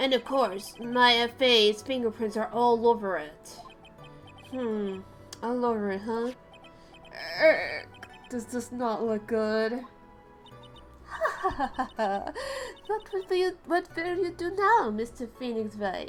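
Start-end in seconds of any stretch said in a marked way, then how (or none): 11.0-16.1 cartoon vampire voice, pitched up, with cackling. Reading a game character's taunting line aloud, in a vampire-like voice. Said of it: "she sounds like a vampire when I do it like that".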